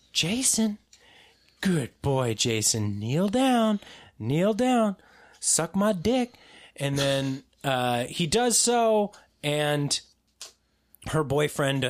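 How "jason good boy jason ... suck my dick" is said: condescending, swooping, sing-song put-on voice. Retelling a horror plot where she pretends to be the killer's mom: imitating Jason's mom. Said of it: ""I'll play his mom."".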